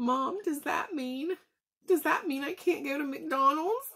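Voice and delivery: put-on trembling, teary, high-pitched child voice. A mother retells what her six-year-old son asked her, imitating a quivering kid voice. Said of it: "his little voice was quivering".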